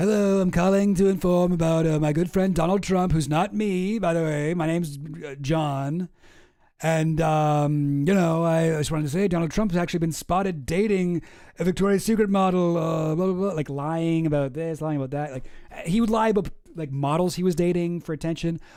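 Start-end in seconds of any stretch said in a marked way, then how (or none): 0.0-13.5 fake-casual voice with long, drawn-out ums. Acting out a call to gossip magazines posing as a tipster: imitating Donald Trump on a phone call. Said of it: "break his own scandals and be like".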